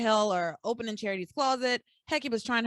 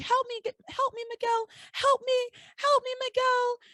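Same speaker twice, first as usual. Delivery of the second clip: put-on shrill, piercing, very high scream; 13 semitones higher than usual. Retelling a scene, the speaker acts out Charity screaming for help. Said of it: "Charity's screaming".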